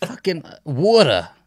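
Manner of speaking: New Jersey accent, very high and loud. Asked what a Jersey accent sounds like, showing how he says water: Jersey accent. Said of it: "That's not how I talk".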